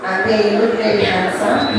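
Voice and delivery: ordinary talk, nothing marked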